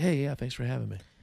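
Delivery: mock super nice, friendly tone. Imitating Tom thanking people after getting off stage: imitating Tom being super nice. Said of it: "Just the nicest guy".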